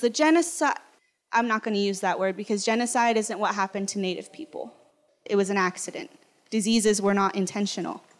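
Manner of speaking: normal talking voice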